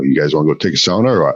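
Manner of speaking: quick local dialect. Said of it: "the local dialect kinda sounds like".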